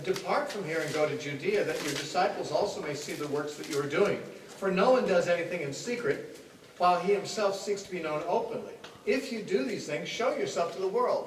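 ordinary talk, nothing marked

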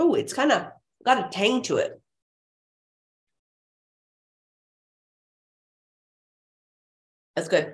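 chewing while speaking with mouth full. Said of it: "I don't want to be gross and talk and chew at the same time".

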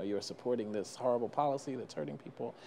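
ordinary talk, nothing marked

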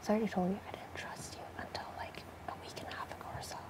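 hushed whisper.

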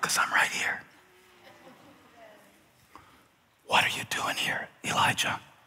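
soft, very quiet whisper, barely voiced. Retelling a Bible story, the speaker voices God speaking to Elijah, whispering as God. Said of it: "I'm gonna whisper it".

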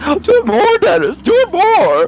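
put-on very high, swooping, gushing, excited voice. Retelling the other player's reaction: imitating them excitedly begging for more. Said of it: "and you're like".

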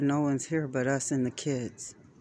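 ordinary delivery, nothing marked

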